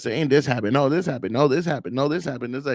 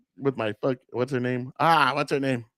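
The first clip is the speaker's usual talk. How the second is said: ordinary delivery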